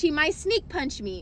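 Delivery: ordinary talk, nothing marked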